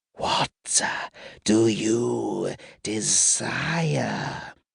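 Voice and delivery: high, creaky sibilant hiss, "you" drawn out. Narrator reads a voice asking Rin, kneeling, what she desires, in a sibilant voice. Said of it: "A sibilant voice asked".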